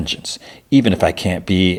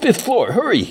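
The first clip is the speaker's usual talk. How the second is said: squeaky, very high, badly faked New York accent. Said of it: "makes an anonymous call with like a fake New York accent".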